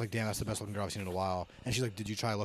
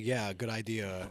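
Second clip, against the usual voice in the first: sarcastic, ironic delivery meaning the opposite. Retelling what he told a friend about a photo: retelling a sarcastic reply. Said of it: "like being sarcastic".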